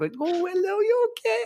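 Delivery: very high-pitched, drawn-out chipmunk voice. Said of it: "almost like Alvin and the Chipmunks voice".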